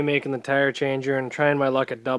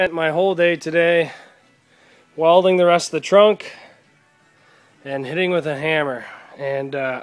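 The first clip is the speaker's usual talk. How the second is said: out of breath, winded. Describing a day of welding and hammering on a car, out of breath. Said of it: "I'm actually out of breath".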